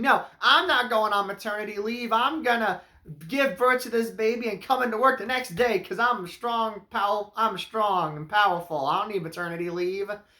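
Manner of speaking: play-acted nonstop shouting. Recapping a movie, mimicking the assistant's constant shouting: Betty Gilpin impression, shouting.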